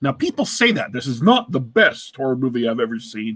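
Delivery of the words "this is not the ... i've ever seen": dry, sarcastic delivery. Imitating how people say a line about a horror movie: imitating a sarcastic tone. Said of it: "in kind of a sarcastic fashion".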